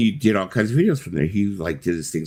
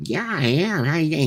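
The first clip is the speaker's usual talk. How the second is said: funky little-guy voice, very high-pitched; 10 semitones higher than usual. Retelling how a man answered when you walked over and asked his name, in David Sterling's funky voice. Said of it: "He's got this really funky voice when he talks like this".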